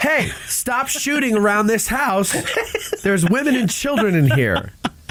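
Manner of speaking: loud yell, calling out.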